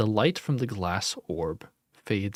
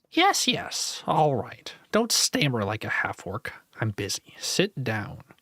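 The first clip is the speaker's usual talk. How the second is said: little, high squeaking creature voice; 3 semitones higher than usual. Game master voicing a figure who breaks the silence, in a squeaky voice. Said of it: "the silence is broken by a squeaky voice".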